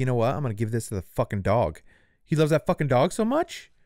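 furious, very angry outburst with swearing. Acting out how the partner reacted after getting monkeypox: imitating a super pissed partner. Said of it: "his partner got super pissed and was like".

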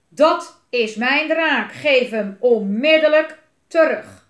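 very loud, thundering, booming voice. Narrator reading a story, a voice suddenly calls through the mountains: booming voice. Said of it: "klonk er opeens een bulderende stem".

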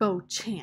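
repulsed, disgusted. Narrating a woman repeating the name of the tiger's owner: with disgust. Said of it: "said Willie Mae with disgust".

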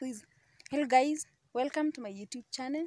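played straight and serious. Joking about copying the other speaker's way of opening: mock serious tone. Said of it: "I also want to be serious".

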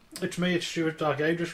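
chewing, words through a mouthful of food. Co-host introduces himself on the lock-in, talking with a mouthful of nuts. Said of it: "but I've got a mouthful of nuts".

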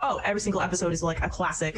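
plain

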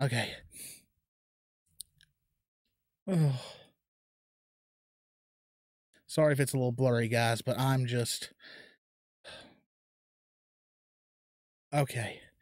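holding back tears, on the verge of crying. Opening card packs for viewers, the speaker is fighting back tears. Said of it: "I'm still like trying to fight back tears".

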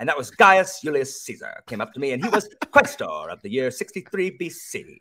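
audiobook narrator reading tone. Imitating an audiobook narrator reading a Roman detective novel: imitating narrator John Lee. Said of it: "he talks just like that in this tone of voice".

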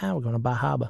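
put-on relaxed local Boston accent. Imagining someone who mentions going to bar harbor: boston accent. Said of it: "somebody with a Boston accent just being like".

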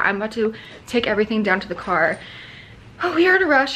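out of breath, winded. Rushing to take everything to the car while updating viewers, winded. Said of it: "I'm winded".

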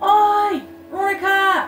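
loud, high calling out.

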